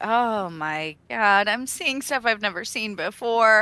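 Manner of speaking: slightly anxious, uneasy character voice. Voicing Aoife as she sees the creature's gouged back, Aoife, a little nervous. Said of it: "Aoife gets a little nervous".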